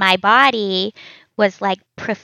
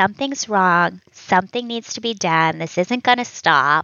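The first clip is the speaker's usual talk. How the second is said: ordinary delivery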